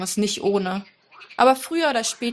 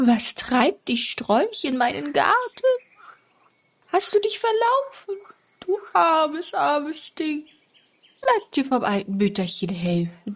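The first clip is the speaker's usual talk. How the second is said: put-on high, creepy, eerie voice of a little old woman; 6 semitones higher than usual. Finding someone lost in the garden, speaking in an eerie voice. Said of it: "eine unheimliche Stimme".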